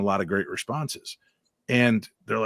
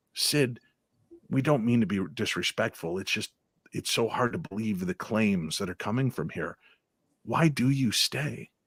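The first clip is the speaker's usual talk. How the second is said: soothing, respectful, soft and calming voice; 3 semitones lower, 5 dB quieter than usual. Retelling how he spoke to a spirit during an investigation: imitating his own calming voice. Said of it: "I would just talk in that calming voice".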